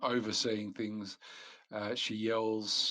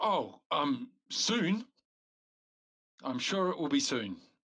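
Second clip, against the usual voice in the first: embarrassed, sheepish tone; 5 semitones higher, 4 dB louder than usual. Voicing a woman who answers the players' question, sheepish. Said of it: "She looks at you somewhat sheepishly and says".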